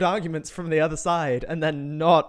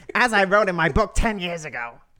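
strained, throat-tight put-on imitation voice; 2 semitones higher than usual. Speaker mimics someone who keeps saying a phrase, in a strained imitation voice. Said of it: "I'm going to stop doing the voice now, but, you know, it hurts the throat".

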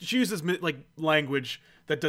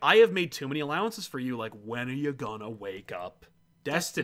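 ordinary talk

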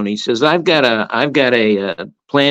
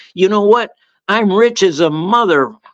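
high, shouted, yelled comeback; 6 semitones higher than usual. Retelling the coach's reply to a heckling student: imitating Ed Cooley shouting. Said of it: "Cooley shouts back at him".

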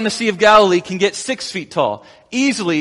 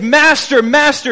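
mock screaming, much higher pitch; 6 semitones higher, 4 dB louder than usual. Retelling people bailing water on a sinking boat, acting out screaming. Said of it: "they're screaming over the waves".

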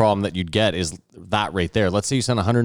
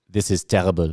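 put-on French accent. Recapping a film scene, quoting a man in a French accent. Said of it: "I don't know why he's French".

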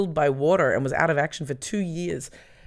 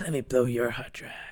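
low, creepy man voice, would-be sexy; 4 semitones lower, 4 dB quieter than usual. Talking about cleaning computers with another speaker; creepy man voice. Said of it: "I need to sound like a creepy man to be sexy".

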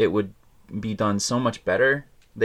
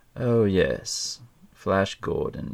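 silky evil henchman voice, very slow. Imitating a movie henchman: silky evil henchman voice. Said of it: "his voice is, like, silky, evil goodness".

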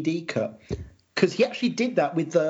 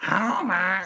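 committed, convincing nagging voice; 3 semitones higher than usual. Retelling a bit, the speaker voices Marge calling Homer; imitating Marge's nagging voice. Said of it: "I need my good nagging voice".

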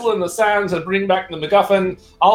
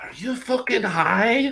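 hushed, voiceless half-whisper; 4 semitones higher, 5 dB quieter than usual. As Belwyn, leaning over to a companion, half-whispering. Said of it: "leans over and whispers".

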